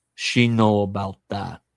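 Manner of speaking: heavy, thick put-on Spanish accent. Retelling Raul's answer when questioned: Raul, thick Spanish accent. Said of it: "That's the best I can do, for he said it through a thick Spanish accent".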